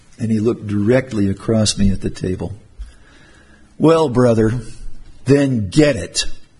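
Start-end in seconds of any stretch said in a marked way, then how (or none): 3.8-6.3 put-on snarled, slow, drawn-out delivery. Retelling an elder's reply across the table, retelling it with a snarl. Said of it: "Not maybe the snarl I had just now".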